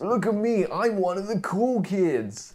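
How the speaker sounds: very high, loud, put-on generic American accent. Performing a remembered line when asked for lines: put-on American accent. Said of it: "what accent was that?".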